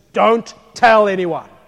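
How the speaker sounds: very loud stern voice. Retelling what he said to the man, imitating a stern command. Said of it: "he says to him sternly".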